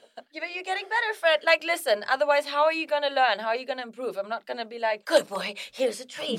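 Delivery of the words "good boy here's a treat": put-on creepy, sleazy creep voice. Telling Fred he won't praise him every time, mimicking the praise: mock creepy voice. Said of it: "You sounded like the pedo when you just did that again".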